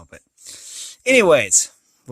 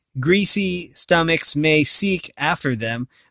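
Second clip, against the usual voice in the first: usual speaking voice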